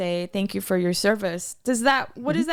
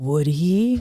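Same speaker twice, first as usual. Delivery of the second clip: tiny, small, doubtful little voice; 7 semitones lower, 4 dB louder than usual. Retelling what she asked back, imitating her little voice. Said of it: "her little voice goes".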